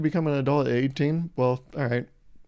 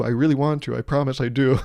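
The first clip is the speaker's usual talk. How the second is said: ordinary talk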